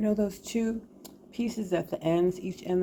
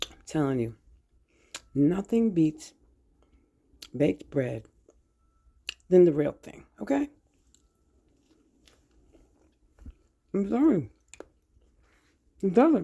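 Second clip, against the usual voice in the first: talking while eating, mouth full; 4 dB louder than usual. Praising fresh baked bread while eating, talking with mouth full. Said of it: "I shouldn't be talking with my mouth full".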